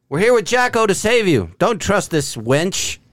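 heroic, high, in-character yell. Shouting in character to children being ushered away: yelling in character. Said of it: "I yell".

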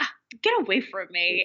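play-acted irritated, annoyed, swooping tone. Retelling a scene where she shoos away little fairies: imitating someone annoyed. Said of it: "she looks annoyed".

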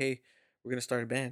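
whispered delivery. Retelling leaning over in church during the service: retelling own whisper. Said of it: "I was kinda whispering to him".

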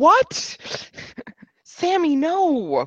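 high, laughing, baffled disbelief. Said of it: "and I was like".

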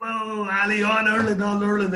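high-pitched, very slow, drawn-out shout. Recounting calling out to someone from a crowd, retelling a shout. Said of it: "I started shouting".

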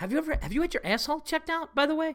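dead serious tone, very high pitched. Retelling how a friend asked a blunt question: imitating a dead serious question. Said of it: "no smile, dead serious".

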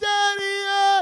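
put-on high, very loud, stretched-out crying child wail. Retelling a father dragging his daughter through a packed mall, imitating a child crying. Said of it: "And she's crying".

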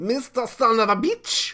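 put-on Russian accent, high and loud.

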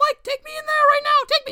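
shrill, very high, urgent scream. A character demands that mike take them in there, screaming. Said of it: "Just stop screaming".

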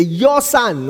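your son stressed with a rising lift. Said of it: "you emphasize on certain things".

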